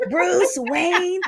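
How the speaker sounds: creepy, high-pitched, slow sing-song delivery.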